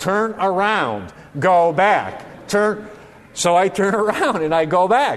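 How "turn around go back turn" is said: very slow, obnoxious, dragged-out navigation voice. Retelling the GPS directions after passing a missing street, imitating an obnoxious GPS voice. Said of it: "in a very obnoxious voice".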